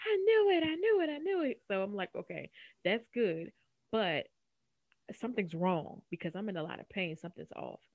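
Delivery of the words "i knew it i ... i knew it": very high, loud, shrieked repeated screaming. Retelling how the speaker's husband reacted on the phone: retelling husband's scream. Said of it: "he's like screaming".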